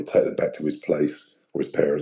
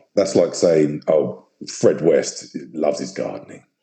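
ordinary talk

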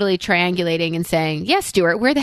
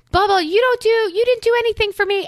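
mock yelling, pitched much higher; 14 semitones higher than usual. Retelling Mallory's meltdown, quoting her yelling at the speaker: imitating Mallory yelling. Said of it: "She's yelling at me and she's yelling to me".

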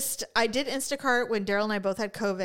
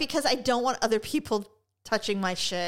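normal talking voice

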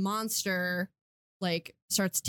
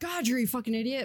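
put-on jeering, heckling tone, kept mild; 4 semitones higher than usual. Imagining a listener screaming an insult: imitating someone screaming. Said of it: "someone screaming it at me right now".

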